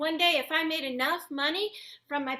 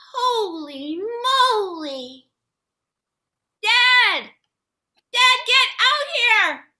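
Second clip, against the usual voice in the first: booming high yell, very loud, moly drawn out; 6 semitones higher, 11 dB louder than usual. Finding the bike's sack stuffed with money, the speaker calls Dad outside, shouting. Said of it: "sorry for shouting".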